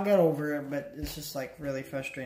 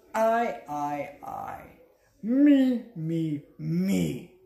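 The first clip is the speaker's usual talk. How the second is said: strange, strained voice, very slow, each word drawn out; 3 semitones higher, 4 dB louder than usual. Showing again the quote that slipped: Pee Wee Herman voice. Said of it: "That's what I was trying to do".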